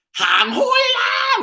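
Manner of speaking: acted very high hollered yell, "la" drawn out. Retelling how grandma behind on the stairs yelled: imitating grandma yelling. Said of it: "she yells".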